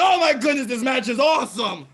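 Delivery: overdramatic, very high-pitched, loud gushing. Imitating Josh reacting to a wrestling match: imitating overdramatic Josh. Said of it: "his overdramatic self".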